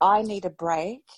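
acted, very angry, furious voice. Retelling an argument with the husband in an angry tone. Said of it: "said to my husband in a very angry tone".

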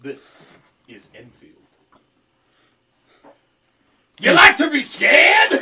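put-on very high, very loud, shrill, booming creepy old man voice. On a radio show, the speaker introduces a story in a creepy old man voice. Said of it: "Creepy old man voice".

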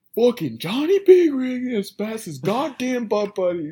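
top-of-the-lungs scream, very high, loud and shrill. In the car on the interstate between two semis, imitating Cole screaming. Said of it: "Cole literally is screaming at the top of his lungs".

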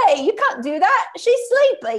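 terrible put-on British accent, high and swooping. Recalling playing the urchin boy in a sketch show: terrible put-on British accent. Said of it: "he's just a weird little guy he's like, ... Like that. ... like a terrible British accent".

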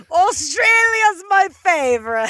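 bad Australian accent, very high and loud. Naming a favorite country, the speaker tries a bad Australian accent. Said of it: "it is not an Aussie accent".

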